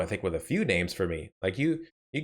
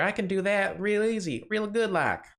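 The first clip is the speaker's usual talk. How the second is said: put-on southern American accent, laid on thick; 9 semitones higher than usual. Showing off the accent someone wouldn't let them do earlier, southern accent. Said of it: "why couldn't he let me do a southern accent".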